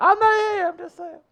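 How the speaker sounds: voice shooting up, very high-pitched. Replying after being jokingly introduced to everyone: voice going high. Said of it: "why'd your voice get so high there?".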